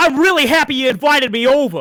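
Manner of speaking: very high, very slow, drawn-out Brooklyn accent. Showing that a Brooklyn accent can't sound nice: Brooklyn accent. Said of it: "you can't go".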